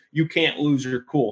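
mock yelling in a coach voice. Describing a college basketball coach losing his cool, imitating a coach yelling. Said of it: "yelling at the players".

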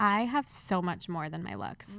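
ordinary talk

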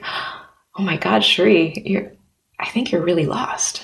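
mock gasping delivery. Retelling her ex's reply during a phone call, imitating someone gasping. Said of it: "him like kind of like gasping".

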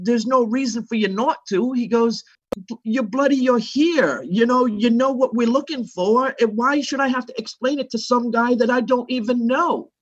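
put-on sustained English accent. Retelling what a man at rehearsals told him, English accent impression. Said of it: "in his English accent".

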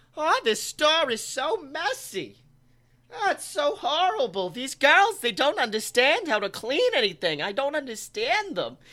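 pitch swinging widely up and down. Retelling what the old lady at the drive-thru window said: Linda Belcher voice. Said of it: "with fucking Linda Belcher".

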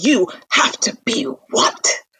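very slow, stretched-out, acted-out yell. Retelling a scene where he demands an answer from her, imitating him yelling. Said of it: "then he starts yelling".

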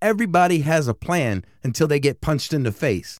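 ordinary delivery

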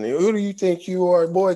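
put-on very high-pitched, heavy country accent. Retelling a coach confronting him at practice, in a strong country accent. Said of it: "really strong country ass accent".

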